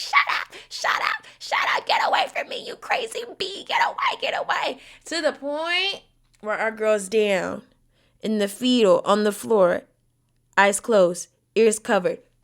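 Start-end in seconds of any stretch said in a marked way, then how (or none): 0.0-4.8 acted-out desperate, hysterical, frantic, panicked pleading outburst. Retelling how an actress reacted in an elevator: imitating someone screaming. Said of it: "She's screaming. She's like".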